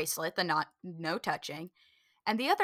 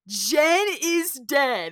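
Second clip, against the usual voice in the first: loud, high-pitched, scary haunted-house style voice; 6 semitones higher, 8 dB louder than usual. Retelling a haunted encounter, quoting one of the scary people: imitating a scary guy. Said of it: "And the guy goes".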